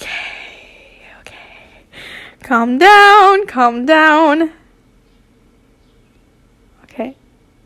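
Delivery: condescending, slow, stifling laughter. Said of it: "me not trying to laugh through this".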